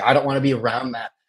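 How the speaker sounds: put-on angry, grumbling voice. Retelling the neighbor's reaction to mom's Toyota: mimicking an angry neighbor. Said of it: "fucking pissed".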